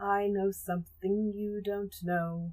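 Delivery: ordinary delivery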